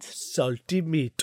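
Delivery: goofy, odd put-on accent, savoring the words. Explaining the word lobscouse to the other speaker, in a silly, weird accent. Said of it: "I don't know why I did it in that silly, weird accent".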